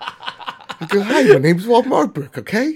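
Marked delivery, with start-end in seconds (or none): 1.0-2.8 loud, movie-star voice pitched way up. Greeting the listeners as a joke: Mark Wahlberg impression. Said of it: "I was gonna do the Mark Wahlberg impression".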